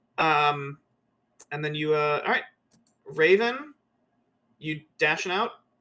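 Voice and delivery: ordinary delivery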